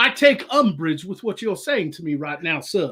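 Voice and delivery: put-on full deep South Georgia accent. Describing the ship's gunslinger character, in a deep south georgia accent. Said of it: "a very kind of deep South Georgia accent".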